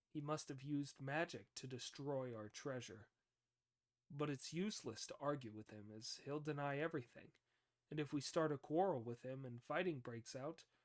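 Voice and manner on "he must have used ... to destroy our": usual speaking voice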